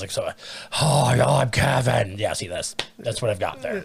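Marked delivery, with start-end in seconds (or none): 0.8-2.7 bad, rough, creaky croak. Trying a character impression while admitting being bad at impressions, a bad Kevin impression. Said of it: "I'm so bad with impressions".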